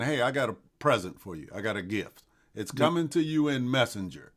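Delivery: plain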